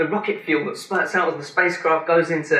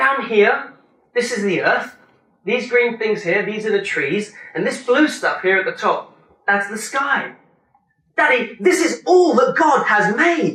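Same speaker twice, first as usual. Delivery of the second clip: put-on high, disappointed, let-down little-boy voice; 5 semitones higher than usual. A father retells his son explaining his painting, imitating the son's disappointed voice. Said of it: "in a disappointed voice".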